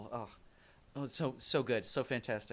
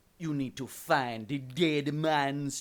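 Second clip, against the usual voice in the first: exaggerated put-on sea-witch voice, higher and louder; 3 semitones higher, 7 dB louder than usual. Doing a requested impression for another speaker: over-exaggerated Calypso voice. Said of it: "I over-exaggerate it on purpose".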